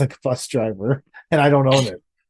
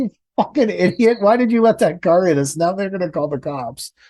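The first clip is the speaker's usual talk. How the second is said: acted, heated, mild half-yell, angry and pitched up; 5 semitones higher than usual. Retelling screaming at the truck driver after a Lexus hit the truck: retelling a scream. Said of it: "I was screaming at him".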